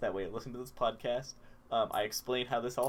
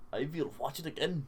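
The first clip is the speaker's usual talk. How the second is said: clumsy, bad fake accent that sounds German; 3 semitones higher than usual. Admitting they're bad at accents, the speaker tries one that sounds German. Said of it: "That sounds like a German accent".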